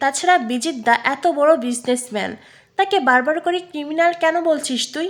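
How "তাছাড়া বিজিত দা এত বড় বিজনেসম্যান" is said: ordinary delivery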